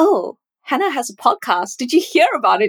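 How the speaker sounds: mocking, sarcastic, swooping sing-song tone. Speaker mimicking how friends mention her podcast, mock-sarcastic friends' imitation. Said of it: "In a sarcastic way?".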